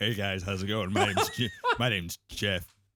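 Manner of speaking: forced, very low voice. Recalling how the speaker's lowered voice sounded: forced low deep voice. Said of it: "It sounded like you were lowering your voice".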